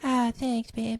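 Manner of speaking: put-on high-pitched cartoon kid voice.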